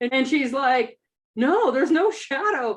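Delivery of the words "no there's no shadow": slow, offhand, unbothered nonchalant tone. Retelling a friend's reply about a shadow: imitating a nonchalant reply. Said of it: "so very nonchalantly".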